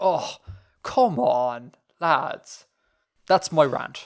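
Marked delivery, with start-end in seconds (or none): 0.0-2.7 put-on very slow, daft, drunken Irish drawl. Mocking a video game voice: imitating a slightly daft drunk Irishman. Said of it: "affect the sort of, like, slightly daft, drunk Irishman".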